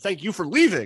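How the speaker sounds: acted-out mock yell. Retelling a woman yelling at a man as he leaves, retelling a yell. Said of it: "Susie yells at him".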